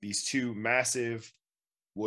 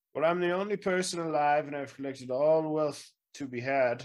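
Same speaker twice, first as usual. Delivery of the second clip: put-on high, centuries-old wizard voice; 6 semitones higher than usual. Voicing the wizard who hoarded all the treasure, centuries-old wizard voice. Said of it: "I am a hundreds of year old wizard".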